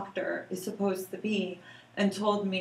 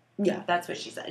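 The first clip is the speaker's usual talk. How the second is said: normal talking voice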